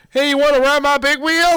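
shrill, very high, full-volume screaming yell. Retelling what a friend screamed out a truck window: imitating someone screaming. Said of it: "opens up the back window and screams".

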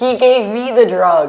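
loud yell from far off, in a character voice. On a giant whale, answering someone on the bow of a ship, yelling. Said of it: "I'm yelling at you from the giant whale".

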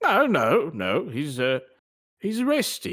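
put-on spoken with British accent.

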